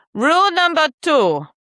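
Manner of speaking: very high-pitched put-on fake German accent. Announcing the next rule, fake German-sounding accent. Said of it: "I don't know what kind of accent that is".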